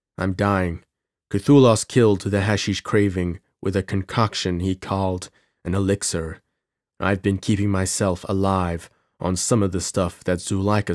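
ordinary delivery

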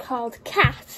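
plain

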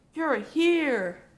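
loud, joyful happy cry, drawn out. McQueen sees his friends waving from the pit road; happy cry. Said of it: "McQueen cried happily".

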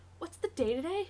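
sudden, high-pitched abrupt blurt. Narrator voicing the storyteller's words to Himitsu, blurted out. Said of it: "and blurted out".

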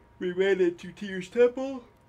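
loud delivery talking through a big yawn. Host recapping the episode for viewers, yawning. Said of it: "I am yawning".

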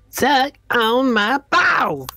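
high-pitched, bratty cartoon child voice. Voicing a little creature that keeps repeating itself, in a Cartman voice. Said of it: "you give it like a Cartman voice".

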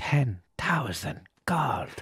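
whispering voice. Player steps in to break up a fight so the other guy can't hear: whispered. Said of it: "I whisper it".

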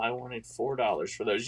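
hushed, half-whispered stage whisper. Retelling what a kid selling action figures said to mom: imitating a half-whisper. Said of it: "he whispers to my mom".

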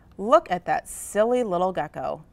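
plain reading voice

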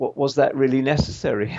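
ordinary delivery

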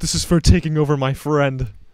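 high-pitched yell in a character voice. Casting burning hands at an enemy, yelling in character: in-character yell. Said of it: "I yell, like".

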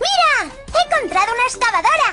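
put-on very high, childlike little-girl voice.

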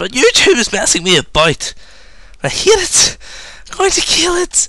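very high, shrill, swooping ranting scream, climbing high. Apologizing to viewers while YouTube acts up, screaming. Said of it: "I'm sorry if I'm screaming into this".

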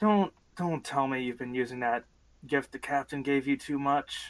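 whispering. Beside a patient's biobed, asking someone about a gift from the captain, whispering. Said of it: "and I'm just whispering".

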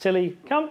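bright, high, upbeat, exciting call-out. Showing how to call Tilly with a simple command: bright, exciting call. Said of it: "it needs to be as bright and exciting as that".

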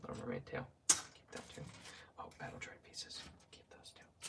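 very soft, close ASMR whisper.

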